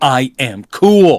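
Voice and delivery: angry, fed-up, pissed-off vampire voice. Retelling a movie scene where a character gets angry: imitating an angry character. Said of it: "finally he gets pissed off".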